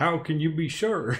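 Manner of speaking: put-on beast voice in a Southern accent. Voicing one of the elemental beasts in a narrated scene, southern accent. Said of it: "I'll do the Elemental Beast with like a Southern accent".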